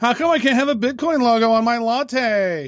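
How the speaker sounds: high whiny voice, latte drawn out. Playing someone desperate to buy crypto, whiny voice. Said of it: "I want to say it in a whiny voice".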